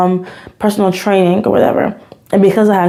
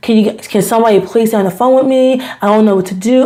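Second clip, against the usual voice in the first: panicked pleading voice, faster; 2 semitones higher than usual. Retelling calling the police about a car outside the house, retelling a panicked plea. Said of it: "I am freaking out".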